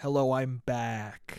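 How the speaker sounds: strange, formal, put-on seductive voice. Returning to the recording after a break, greeting viewers in a weird seductive voice. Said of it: "saying back in weird, seductive, uh, formal voices".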